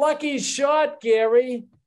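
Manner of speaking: put-on high yell. Telling a golf story, a spectator calls out to the player, retelling a yell. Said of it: "some guy out in the yelling".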